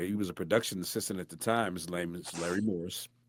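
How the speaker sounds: ordinary talk, nothing marked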